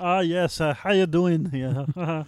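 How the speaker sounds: big fat cartoon bear voice in put-on German accent. Showing the german voice he did last weekend, a big fat animated bear voice. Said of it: "You sound like big fat animated bear".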